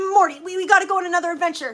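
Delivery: loud, high, urgent yelling, tripping over words. Performing a skit of impressions, Rick voice. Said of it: "Rick bursts into the room".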